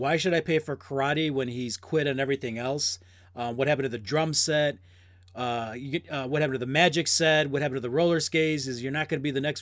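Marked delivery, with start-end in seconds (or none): none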